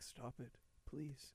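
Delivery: barely audible, very quiet breathy whisper. Retelling a film scene where Billy hushes a girl: imitating Billy's whisper. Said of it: "He, like, whispers".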